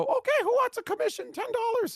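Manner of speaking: very high, squeaky cartoon voice.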